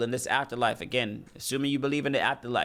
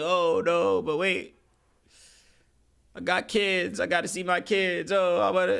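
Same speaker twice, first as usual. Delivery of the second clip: slow, weepy, crying voice with begging tone; 6 semitones higher than usual. Mocking a criminal facing a judge, imitating someone crying and pleading. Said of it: "now you're crying and saying".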